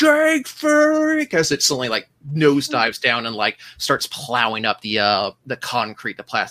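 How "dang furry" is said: very high-pitched, loud, shrill put-on yell. Voicing a man on a nosediving speeder looking back up: in-character yell. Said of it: "looks back up and yells".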